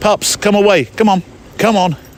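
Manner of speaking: stern, no-nonsense voice. Calling the dog away from the pond water, in a serious voice. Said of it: "That's my serious voice".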